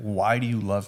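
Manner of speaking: sorrowful, super sad, pleading tone. Retelling her question asked while looking in the eyes: imitating someone super sad. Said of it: "with being super sad".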